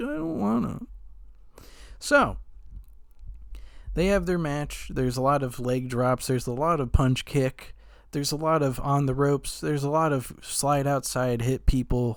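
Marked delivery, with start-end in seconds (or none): 0.0-1.7 half-whispered, breathy, whiny little voice. Retelling how a wrestler refused to do his usual act, imitating a whiny refusal. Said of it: "He's like".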